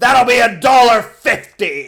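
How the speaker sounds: slow, deliberate, unhurried motherly shopkeeper voice. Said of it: "I gotta stop doing the Augusta voice".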